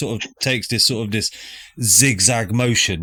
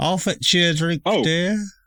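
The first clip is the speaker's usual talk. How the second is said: put-on elderly woman voice, higher pitch; 7 semitones higher than usual. Voicing the old lady answering a lost traveler seeking the pub: old lady voice. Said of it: "an old lady just outside of her window".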